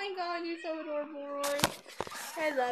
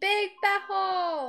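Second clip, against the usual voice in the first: loud, high-pitched, louder delivery; 5 semitones higher, 5 dB louder than usual. Asked by the other speaker to say it louder: louder. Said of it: "Say it louder".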